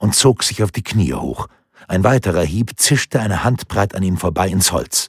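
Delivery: ordinary delivery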